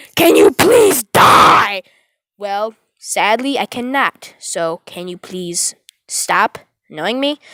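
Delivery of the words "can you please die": loud, irritated, annoyed yell. Recounting how he started yelling at the speaker; retelling him yelling. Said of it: "he just starts yelling at me".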